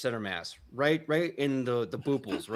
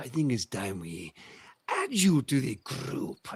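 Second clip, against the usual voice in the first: menacing, threatening orc brute voice. Voicing an orc cracking his knuckles at a player: menacing orc. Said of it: "he goes".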